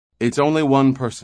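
high, openly relieved tone throughout. Torrin sees a single figure on the scanner after the airlock opens, with open relief. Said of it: "with open relief".

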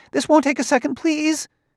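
frantic, desperate, very high, near-squeaking voice. A narrator reads a man begging another not to leave: desperate, almost a squeak. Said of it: "said Grimianus desperately".

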